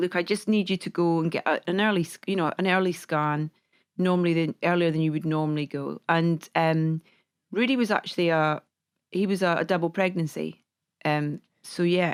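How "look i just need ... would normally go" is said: normal talking voice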